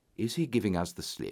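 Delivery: plain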